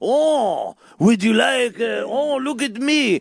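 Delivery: mock French accent, high-pitched, slow, laid on thick.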